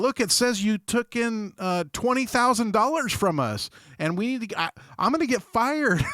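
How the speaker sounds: pleading scammer voice. Mocking scammers who fake a bank page: imitating a scammer. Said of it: "be all".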